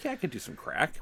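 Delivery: breezy, casual, nonchalant, offhand voice. Retelling a post-overdose interview: nonchalant Andy Dick impression. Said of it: "nonchalantly being like".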